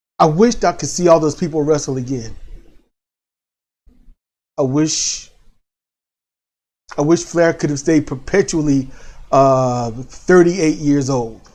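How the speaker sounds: choked-up voice catching with emotion. Remembering watching wrestlers years ago, choked up. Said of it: "I'm trying not to get choked up".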